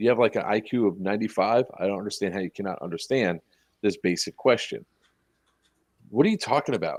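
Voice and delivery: dry, straight-faced, deadpan and condescending. Retelling what they told a lady who kept asking questions: retelling a deadpan remark. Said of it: "the way I say it's so straight face".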